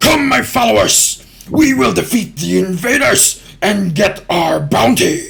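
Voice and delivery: very high, rasping, rough, bellowing orc voice. Voicing an orc leader rallying followers deeper in the cave: commanding orc leader voice. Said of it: "you know this to be a commanding presence".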